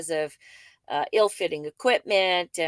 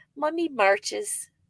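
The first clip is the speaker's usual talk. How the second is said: put-on small, tiny little-boy, toddler-like voice; 6 semitones higher than usual. Retelling what a toddler said with his hands on her face, little boy voice. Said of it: "said to me in his little boy voice".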